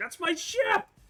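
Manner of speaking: high, loud scream. Voicing a captain whose ship was just hit: screaming. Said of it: "Captain Kwan, uh, scream".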